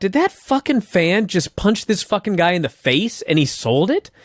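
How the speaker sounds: ordinary talk, nothing marked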